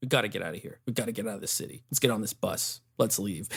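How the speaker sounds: mock whispered, very flat monotone delivery. Reviewing an actress's performance and mocking her line deliveries, imitating flat monotone line delivery. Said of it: "all her line deliveries like very monotone".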